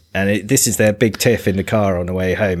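ordinary talk

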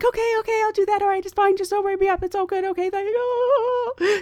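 put-on high pleading, on the verge of tears. Retelling a flight attendant agreeing to stay out of trouble: imitating someone almost crying. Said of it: "She's almost, like, crying".

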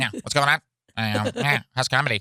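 high-pitched, tiny, small critter voice. Describing a doctor's visit, imitating the doctor in an Animal Crossing voice. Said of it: "that's what he sounds like".

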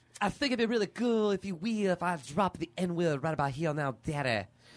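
put-on Cajun accent. Retelling a man pitching an idea to Robert, in a Cajun Dusty Rhodes voice. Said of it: "why was he Cajun in your impression?".

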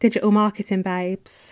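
put-on Essex accent. Saying her podcast's name again on purpose, in a put-on Essex accent. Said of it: "that's what I was going for".

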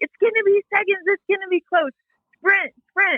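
imitated loud screaming. Retelling a father's words at a marathon finish: imitating a screaming dad.

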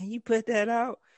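high, loud, irritated lady voice. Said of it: "some lady was like".

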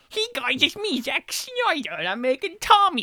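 high, swinging pitch. Imagining a Zack Snyder version of a film, the speaker does a Zack Snyder impression. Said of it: "Your Adam Sandler impression".

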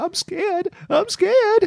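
crying out, very high-pitched crying voice. Retelling how Shailen backed away and started crying, imitating Shailen crying. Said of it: "started crying and going".

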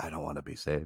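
whispered voice. Retelling what Pauline whispered in Mario's ear: imitating a whisper. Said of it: "she'd whisper in his ear".

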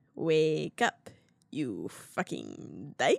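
low, swooping, put-on Chicago accent. Retelling a movie husband's insult to another character, in a Chicago accent. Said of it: "he's got a Chicago accent".

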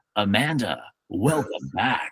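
hushed movie-trailer narrator announcer voice. Retelling the ending of a movie caught on TV, movie trailer guy voice. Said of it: "the movie trailer guy voice comes on and she goes".

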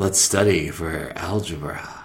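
mock-seductive, put-on sexy voice. Recalling the voice used back in college: put-on sexy voice. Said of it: "With the sexy, my sexy voice".

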